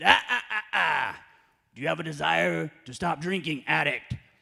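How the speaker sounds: put-on very loud, creaky, crusty old man voice. Retelling an old timer cutting him off as he introduced himself: crusty old-timer voice. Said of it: "I don't know why I do that voice".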